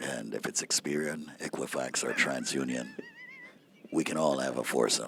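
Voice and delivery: very low, soft, hushed, sultry voice. Asked to do USA Credit Repair as if it were midnight, continue in a sexy midnight-show voice. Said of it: "How would you do USA Credit Repair if it was midnight?".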